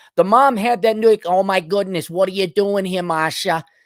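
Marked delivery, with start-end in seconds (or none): 1.3-3.7 put-on general Boston accent. Describing how the mom sounded, the speaker quotes her: boston accent. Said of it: "your general Boston accent".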